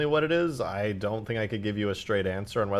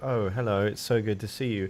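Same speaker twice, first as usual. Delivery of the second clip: amateurish attempt at an English accent. Explaining how his accents get mixed up, the speaker demonstrates: attempted English accent. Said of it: "I'll try to do an English accent like".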